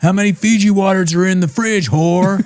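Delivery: pitched way up, furious, angry berating. Imitating Tom berating his wife, mock angry husband rant. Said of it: "He's mad".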